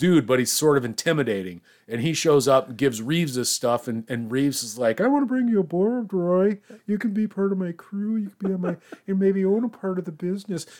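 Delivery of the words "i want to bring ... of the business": feeble, high-pitched, weak nerd voice. Retelling a movie scene, quoting Reeves: imitating a weak nerd. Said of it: "just a weak nerd".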